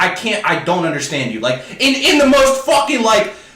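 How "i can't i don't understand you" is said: usual speaking voice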